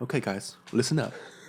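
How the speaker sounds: put-on soft British voice. Imitating Brian Cox explaining science: soft British accent, Brian Cox. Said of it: "speaks so softly".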